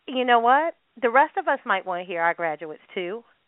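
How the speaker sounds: ordinary talk, nothing marked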